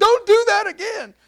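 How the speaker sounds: high, loud, fretful, worried mom voice.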